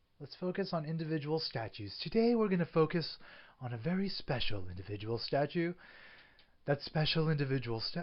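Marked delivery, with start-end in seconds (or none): 2.0-8.0 dramatic romance-thriller narrator voice. Introducing today's special statue, talking like in a romance thriller. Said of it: "talking like I'm in a romance, like, uh, thriller".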